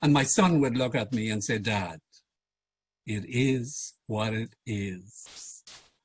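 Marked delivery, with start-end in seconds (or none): 1.6-5.6 very slow, low, soft, dropped-down voice. Speaker demonstrating pitch by quoting his son's reply to him, lower pitch. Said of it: "Lower pitch".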